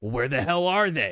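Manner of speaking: very loud, angry growled voice. Voicing Bakugo as he searches the cells: growling. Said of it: "growl and just be like".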